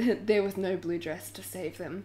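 ordinary delivery

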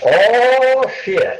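put-on very high East Tennessee accent, stretched oh. Retelling a fellow piping up from the back of the bus, in an east tennessee accent. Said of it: "in his wonderful East Tennessee accent says".

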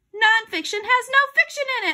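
shrill, very high, called-out shout. Answering a question put to the group, shouting. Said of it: "I shouted".

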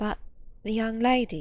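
timid, shy voice. Narrator reading a woman's question, timidly. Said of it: "she asked timidly".

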